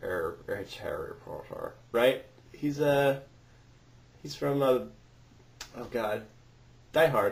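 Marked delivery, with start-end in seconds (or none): 0.5-1.7 sinister, menacing, near-whispered villain voice. Saying he can't say Harry Potter without doing a voice: sinister Snape voice. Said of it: "The uh, Sin- Sinister Snape guy".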